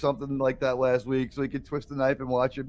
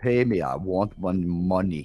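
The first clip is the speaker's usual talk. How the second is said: put-on Danish accent, lower pitch; 7 semitones lower than usual. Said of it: "Just sound like [name]".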